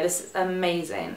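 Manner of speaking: usual speaking voice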